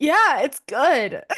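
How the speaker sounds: gag-suppressed speech. Retelling a girl answering her mom's question; imitating someone trying not to gag. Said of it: "she's going like she's like trying not to gag".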